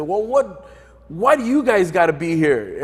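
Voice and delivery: acted-out, half-yelled, mild heckling yell. Retelling what the passerby yelled at the group: imitating someone yelling. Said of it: "he kinda yelled at us".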